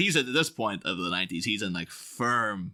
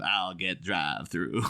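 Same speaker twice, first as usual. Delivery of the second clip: put-on southern drawl, lower; 4 semitones lower than usual. Imagining Batman lines in the Val Kilmer Tombstone voice: Val Kilmer southern drawl. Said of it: "southern drawl".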